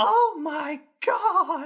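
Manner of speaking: put-on tiny, cute little kid voice, pitched very high. Retelling what a little kid behind the speaker said after the finale: cute little kid voice. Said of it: "in just the cutest little voice".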